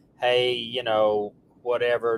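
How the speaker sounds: ordinary talk, nothing marked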